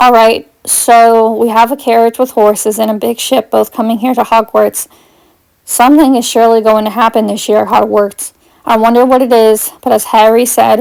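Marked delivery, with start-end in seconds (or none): none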